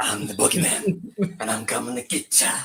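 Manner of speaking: monster-under-the-bed voice. Joking that a background noise sounded like the Boogeyman: Boogeyman voice. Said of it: "I thought that was the boogeyman".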